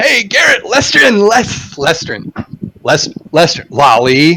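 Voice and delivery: loud, high-pitched calling. Speaker's character waves and calls out to Garrett, shouting in a raised voice. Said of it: "shout in a little bit of a raised voice".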